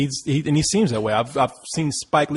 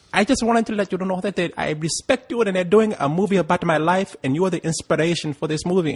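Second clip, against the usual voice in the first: put-on accent from Ethiopia; 4 semitones higher than usual. Retelling a woman's speech at a party, speaker attempts an Ethiopian accent. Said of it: "I can't really do the accent".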